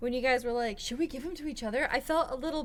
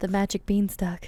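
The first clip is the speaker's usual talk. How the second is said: suggestive, sexual tone, lower and louder; 4 semitones lower, 5 dB louder than usual. Offering a nickname to another speaker in a suggestive tone. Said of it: "way too sexual".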